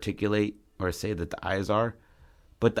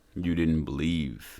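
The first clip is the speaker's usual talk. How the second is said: deep, low voice, right in the ear; 5 semitones lower than usual. Retelling a story, the speaker quotes a man turning around, deep voice. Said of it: "it's a deep voice".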